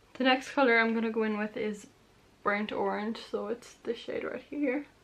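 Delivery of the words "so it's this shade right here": cracked voice, breaking mid-phrase. Presenting the next eyeshadow colour she's applying, voice cracking. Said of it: "My voice just cracked".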